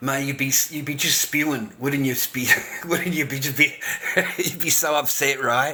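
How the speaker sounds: words broken up by laughs while talking. Speaker imagines how upset a man would be, laughing while talking. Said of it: "I'm sorry for laughing".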